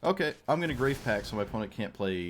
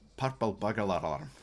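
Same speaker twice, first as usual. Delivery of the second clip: put-on Scottish accent. Trying a tongue twister again: put-on Scottish accent. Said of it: "when you put like a Scottish accent on".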